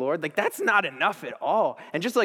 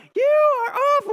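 shrill, high-pitched, loud yelling; 6 dB louder than usual. Retelling how a woman yelled at the speaker during an adrenaline rush, retelling a yell. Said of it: "So she's yelling like".

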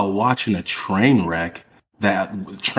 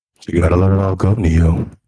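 put-on very deep voice, lower pitch; 3 semitones lower, 5 dB louder than usual. Pressed to say the whole quote addressed to neo, deliver it in a very deep voice impression. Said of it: "His voice gets so deep".

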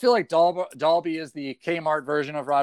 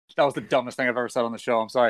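ordinary talk, nothing marked

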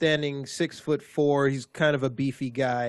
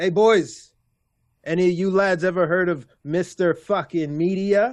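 loud, high hollering shout; 5 semitones higher, 5 dB louder than usual. Retelling a story where a man looks around at the lads: Mr. Media shouting to the room. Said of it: "he looks around and he shouts".

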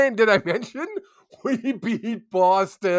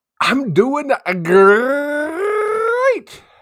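loud, high mascot-style cheer, "great" drawn out; 8 semitones higher, 6 dB louder than usual. Answering how the day is going, in a Tony the Tiger voice. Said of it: "as Tony the Tiger used to say".

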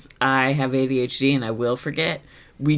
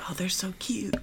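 soft, high, very quiet whisper; 6 semitones higher, 11 dB quieter than usual. Voicing Red speaking to Kitty: quiet whisper. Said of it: "Red is just very quietly whispering to Kitty".

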